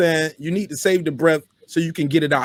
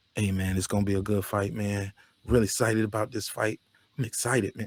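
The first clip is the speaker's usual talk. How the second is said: laid-back, subdued, lethargic, very low and quiet; 8 semitones lower, 10 dB quieter than usual. Mocking how YouTube guys sound excited about a fight, imitating a laid-back, subdued voice. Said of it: "You sound real laid back and too subdued".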